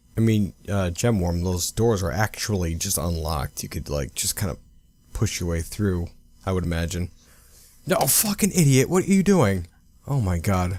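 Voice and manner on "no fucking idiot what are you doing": very high-pitched, fed-up, exasperated British accent. Reacting to Gemworm not pushing through unlocked doors, exasperated British accent. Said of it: "I went British there for a minute".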